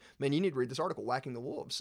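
normal talking voice

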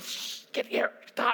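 furious anger squeezed into a whisper. A parent retells hushing their kids in a room that needs decorum, retelling an angry whisper. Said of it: "Trying to whisper your anger".

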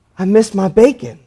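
put-on soft-spoken, timid voice. A pastor retells what church member Nell told him, imitating Nell's timid soft voice. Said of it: "she very timid, soft-spoken voice".

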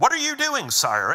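very high, sharp voice.

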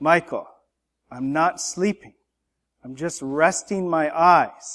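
mock, rather annoyed, irritated father voice, just woken. Retelling what the speaker's dad said when told to wake up: imitating dad's annoyed voice. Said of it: "in a rather annoyed voice".

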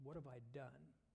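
ordinary talk

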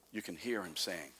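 usual speaking voice

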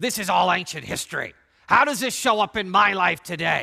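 put-on loud, angry elf voice. Speaker voicing the audience's imagined question, in a mock-angry elf voice. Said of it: "in that angry elf voice that you like to use".

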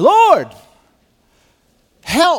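very high, very loud, fierce pleading cry. Retelling a prayer to the Lord, acting out Moses pleading fiercely. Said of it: "this is him with real emotion saying".

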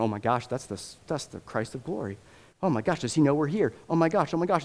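panicking, terrified freak-out, rising. Acting out demons trembling as Jesus preaches: imitating demons freaking out. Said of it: "the demonic freaks out".

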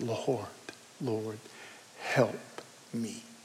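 mock whispered, heartbroken, begging tone. Retelling a woman kneeling before the lord, acting out a heartbroken plea. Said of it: "I can just hear the heartbreak in her voice".

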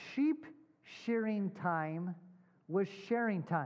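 slow, measured, halting, deliberate word-by-word pacing. Speaker passing on a commentators' wordplay to listeners, said slowly. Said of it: "I'm going to try to say it slowly".

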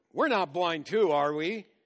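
loud, snide, put-on sarcastic tone. Speaker retells a group's reply to Jesus: mock-sarcastic retort. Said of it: "they sarcastically retort".

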